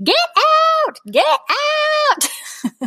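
mock very high, shrill, stretched-out child's scream. Retelling what a child screamed behind a shut door: imitating a child screaming. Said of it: "I could hear her screaming".

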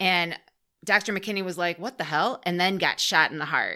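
usual speaking voice

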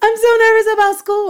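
put-on very high, loud, teary little kid's wail. The speaker retells what their child finally said, imitating a child in tears. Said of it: "And it was just like tears".

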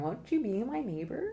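high, open tone, ending curling upward. Teaching voice patterns, demonstrating the Mr. Rogers approachable voice. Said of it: "more open and engaging voice pattern".

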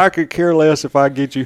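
ordinary talk, nothing marked

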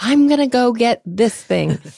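very enthusiastic. Retelling a girl shopping with her dad at the market: retelling enthusiastic speech. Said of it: "She was very enthusiastically saying".

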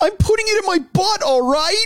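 sad, forlorn pleading, pitched very high. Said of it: "he's so sad".

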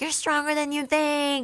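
high, pumped-up, energizing put-on yell.

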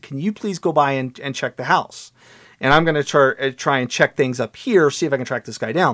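ordinary talk

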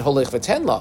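ordinary talk

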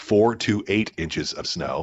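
slow, careful "four to eight", clearly separated words.

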